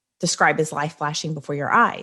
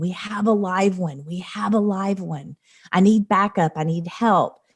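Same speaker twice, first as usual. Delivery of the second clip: acted-out yelling like a rescue worker; 2 semitones higher than usual. Retelling a rescuer calling for backup: imitating a rescuer yelling. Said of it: "he starts yelling".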